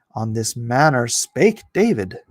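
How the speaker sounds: normal talking voice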